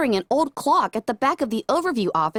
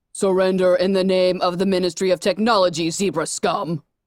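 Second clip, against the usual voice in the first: deep voice booming with authority; 5 semitones lower than usual. Reading a story, a voice booms across the room demanding surrender: deep, authoritative booming voice. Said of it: "A much deeper, authoritative voice boomed".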